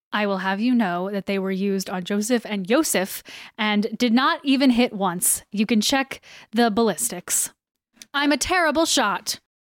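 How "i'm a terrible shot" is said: boastful, proud, head-held-high, pitched-up voice. A character answers a question in a role-play scene, proudly. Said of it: "she said proudly".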